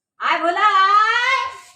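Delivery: high, loud, drawn-out calling voice, projected far.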